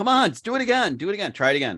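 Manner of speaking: very high, pushy, coaxing, urging shout. Retelling urging someone to fly a drone: imitating own past yelling.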